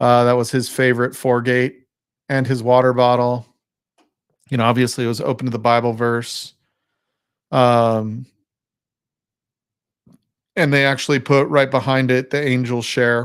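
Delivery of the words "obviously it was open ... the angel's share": emotional, a little choked, with drawn-out um. Speaker describing someone's favorite belongings, a little choked up. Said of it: "a little choked up".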